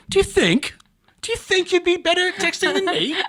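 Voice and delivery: proper-sounding British voice. Repeating the other speaker's question back, imitating a proper british person. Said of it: "You said that like a".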